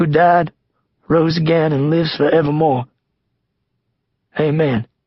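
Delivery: shaky, trembling, wavering voice. Nick finishes a prayer aloud, in a shaky voice. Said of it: "Nick says in a shaky voice".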